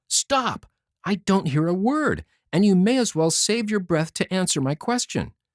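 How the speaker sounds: rough, excited tone. Reading a man who sits bolt upright and interrupts a woman mid-paragraph, rough, excited tone. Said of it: "said in a rough, excited tone".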